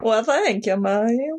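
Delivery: put-on Southern-accented voice. Speaker answering Mario while trying out an accent: southern accent. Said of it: "Did you like my southern accent?".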